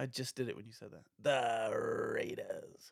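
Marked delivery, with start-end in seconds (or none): 1.2-2.9 offhand, tossed-off sportscaster voice. Asked for an impression, calling a draft pick: Chris Berman impression. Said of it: "That's your best Chris Berman?".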